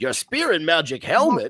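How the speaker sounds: high, loud, swooping, bouncy cartoon rabbit voice. Retelling a cartoon scene, quoting the rabbit's reply: Bugs Bunny voice. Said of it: "Bugs Bunny goes".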